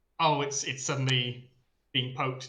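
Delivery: ordinary talk, nothing marked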